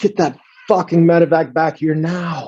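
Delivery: desperate, animal-like, high, loud shrieking scream. Retelling a man screaming over an encrypted radio, imitating a shrieking scream. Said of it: "And he screams".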